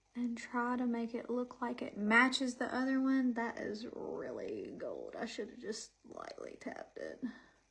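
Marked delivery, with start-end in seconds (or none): 3.4-7.3 very quiet, low, hushed growly drawl. Applying eyeshadow during a makeup tutorial, in a Kardashian growly voice. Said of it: "I'm doing my Kardashian growly voice".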